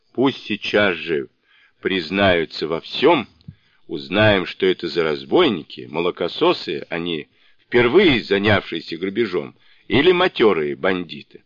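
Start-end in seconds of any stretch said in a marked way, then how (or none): none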